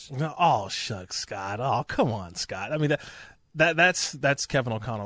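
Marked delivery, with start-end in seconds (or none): 0.1-2.7 slow, drawn-out, humble aw-shucks voice. Doing an impression of a college quarterback turned head coach: Kevin O'Connell impression. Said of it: "That's my Kevin O'Connell impersonation".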